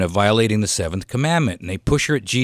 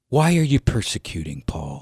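kindly, gentle, soft tone. Retelling a Bible story, quoting Jesus's words to Paul in a gentle voice. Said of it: "With this gentle voice".

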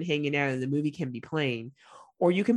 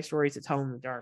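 ordinary delivery

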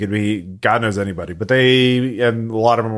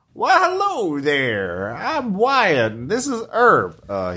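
put-on old farmer voice, much higher; 8 semitones higher than usual. Voicing an armored old farmer meeting the players, Wyatt old farmer voice. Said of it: "like a nice old farming couple".

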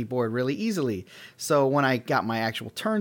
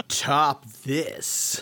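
heartfelt, full of feeling, deep from the belly. Showing how to say Top This for real: with lots of feeling, from the belly. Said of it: "you should say it with a lot of feeling, you know, from your belly".

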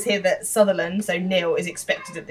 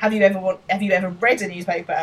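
usual speaking voice

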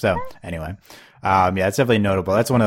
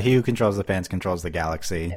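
plain

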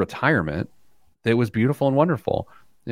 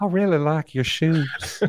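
put-on creepy elderly man character voice; 4 semitones higher than usual. Asked for a voice they always do, the speaker does the creepy old guy from Family Guy. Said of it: "Is it the creepy old guy".

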